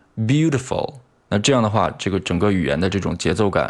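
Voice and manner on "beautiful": "beautiful": strong beau, -tiful dying away. Rhythm lesson, unstressed syllables get gradually quieter: fade after stressed 'beau'. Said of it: "在这两个非重读音阶上我们音量可以逐渐变小".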